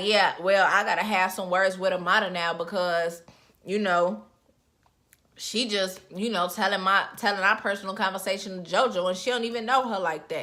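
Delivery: normal talking voice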